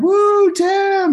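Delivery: play-acted, very high, loud, excited cheering scream. Recalling a friend at his master's belt ceremony, retelling a friend's scream. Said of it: "one of my friends was screaming like".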